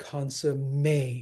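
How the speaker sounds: "consummation" with stress on the -ma- syllable. Scanning a verse line, stress on ma of consummation. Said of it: "it's on the second to last syllable".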